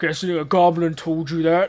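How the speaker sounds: booming, very loud orcish man voice. Voicing an orcish man who answers the door to the party: orcish man voice. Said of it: "seven-foot-tall orcish man stands there".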